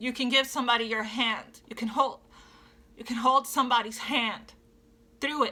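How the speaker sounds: choked-up, emotional, halting, words breaking off. Encouraging listeners to share what they have been through, getting emotional. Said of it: "I'm getting emotional".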